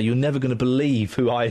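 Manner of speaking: usual speaking voice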